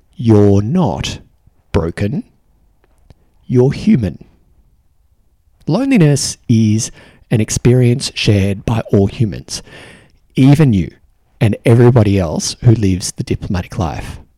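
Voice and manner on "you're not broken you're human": very slow, deliberate, each word drawn out. Speaking to a listener who lives the diplomatic life, very slow. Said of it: "I want to say this very slowly".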